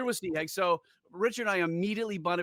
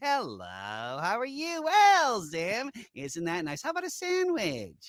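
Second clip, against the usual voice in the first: slow, slimy, nasal voice with false friendliness; 4 semitones higher than usual. A speaker demonstrates the character voice they proposed, nasal and fake-friendly. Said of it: "that nasally kind of like he's trying to be friendly".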